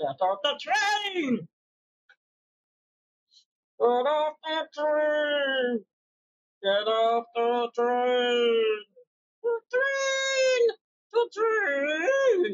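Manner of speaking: very slow, drawn-out, swooping demon voice. Speaker shows off the voice that came out on a crowded subway: demon voice. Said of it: "And then there's my demon voice".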